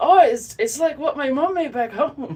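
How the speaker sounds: very high, very loud, shrill bad Scottish accent. Retelling what a man said after tasting the shortbread, in a bad Scottish accent. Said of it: "I might be Scottish, but my accent is bad".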